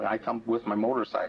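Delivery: ordinary talk, nothing marked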